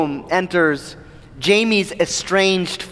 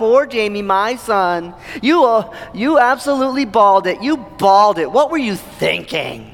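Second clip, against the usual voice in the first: put-on mocking, taunting tone; 3 semitones higher than usual. Retelling how a man mocks Jamie in front of everyone, retelling a mocking taunt. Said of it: "He mocks him".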